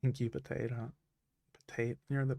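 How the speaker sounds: soft, choked-up voice, throat turning raspy with emotion. Thanking an artist, getting emotional, throat raspy. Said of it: "I'm getting emotional. My throat's getting all raspy".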